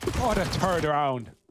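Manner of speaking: strong, thick Irish accent. Asked how a phrase would sound in a thick Irish accent, thick Irish accent. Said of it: "had a thick Irish accent?".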